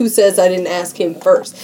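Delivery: ordinary delivery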